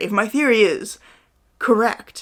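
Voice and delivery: slow, halting, dramatic pause before "correct". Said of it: "an ellipsis in the middle of their sentence right before the last word".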